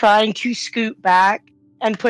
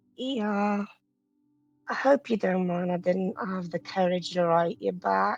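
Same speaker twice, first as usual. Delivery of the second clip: very quiet murmur, voice barely there; 7 dB quieter than usual. As Lily, answering the other character, Lily's very quiet murmur. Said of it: "murmurs in a very quiet voice".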